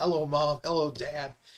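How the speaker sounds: ordinary talk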